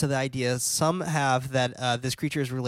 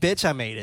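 ordinary talk, nothing marked

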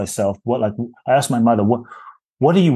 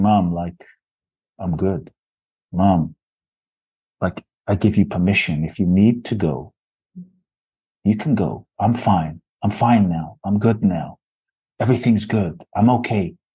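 whispered speech; 3 semitones lower than usual. Retelling words said into the mother's ear: imitating own whisper. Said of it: "I whispered into her ear".

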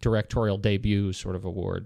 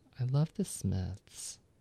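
soft, hushed voice; 2 semitones higher, 7 dB quieter than usual. Describing a favorite film scene, the speaker quotes her line as Zooey Deschanel. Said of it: "she breaks in and says".

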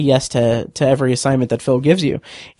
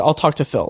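mock blunt, firm, fast and direct delivery. Retelling a line from the episode: stern, quick imitation of Dylan. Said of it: "very sternly, very quickly, and very directly".

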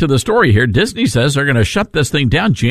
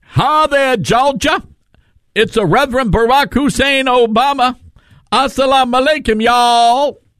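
very high-pitched, preaching-style delivery; 10 semitones higher than usual. Mocking a clip just played: Obama preacher voice.

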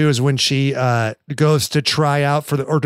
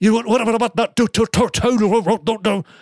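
strong put-on Scottish accent, pitched up, hard to follow; 7 semitones higher than usual. Retelling how an actor talked in a scene, in a scottish accent. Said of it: "he had like a good Scottish accent".

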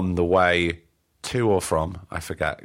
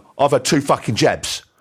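play-acted huffy, put out, loud and high; 7 semitones higher, 6 dB louder than usual. Retelling a tense encounter in a hotel lift: imitating a huffy man. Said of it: "he got all huffy with me and went".

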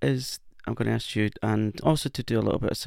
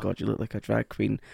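ordinary talk, nothing marked

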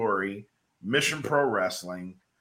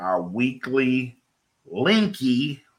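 very slow, careful, word-by-word delivery. A streamer tells viewers about the weekly linky: said very slowly. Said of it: "had to say that slow".

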